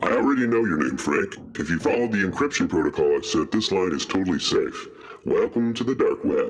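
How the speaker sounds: disguised, electronically modulated voice through a voice modulator. Greeting a new hacker over a secure line: voice modulator voice. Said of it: "why are you using a voice modulator?".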